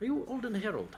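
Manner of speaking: put-on high-pitched Irish accent. A courier delivery person checks a player's name at the door, in an irish accent. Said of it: "he had an Irish accent, didn't he?".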